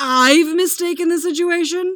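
loud, high, raging roaring outburst. Narrator reads Mick, locked in, answering a well-dressed man, roaring. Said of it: "Mick roars".

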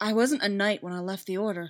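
ordinary delivery, nothing marked

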